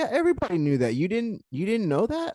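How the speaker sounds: offhand, casual, matter-of-fact, breezy nonchalance, pitched high. Retelling what a woman said about Jill: imitating a nonchalant tone. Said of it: "She said it so nonchalantly".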